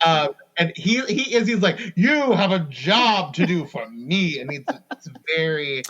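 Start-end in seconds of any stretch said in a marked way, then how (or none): 2.0-4.4 slow, extra sassy, dramatic villain drawl. Quoting Apocalypse's line from the episode scene: sassy Apocalypse voice. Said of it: "extra sassy".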